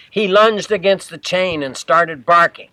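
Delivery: ordinary delivery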